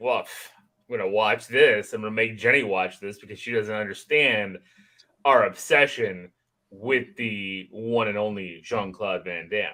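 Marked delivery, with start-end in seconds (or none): none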